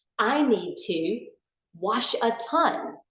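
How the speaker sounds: slow, deliberate pause before "wash a ton". Repeating a parent's line about clothes, with a pause before 'wash a ton'. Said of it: "intentionally with a pause before saying wash a ton when I say it".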